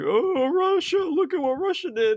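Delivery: mock yelling, pitched very high. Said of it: "yelled out like".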